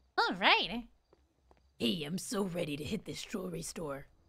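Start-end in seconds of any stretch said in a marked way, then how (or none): 1.8-4.0 much lower, softer fake deep voice. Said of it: "I'll use that voice".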